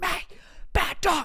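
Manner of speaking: hushed, scolding yell under the breath.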